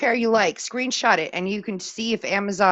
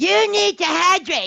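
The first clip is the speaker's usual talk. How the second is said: very high-pitched, put-on cartoon kid voice; 10 semitones higher, 4 dB louder than usual. Asked to do a line in a cartoon voice: Cartman voice. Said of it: "I can even do it in the Cartman voice".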